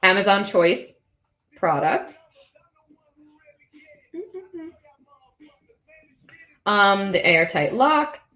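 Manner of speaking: words broken by hiccups. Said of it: "I got some hiccups".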